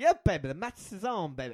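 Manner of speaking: wrestling promo style delivery. Offering a Dusty Rhodes impression instead of Ric Flair. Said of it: "I can do Dusty Rhodes".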